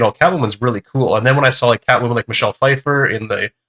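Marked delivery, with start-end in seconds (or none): none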